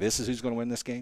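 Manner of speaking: plain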